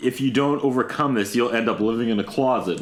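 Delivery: ordinary talk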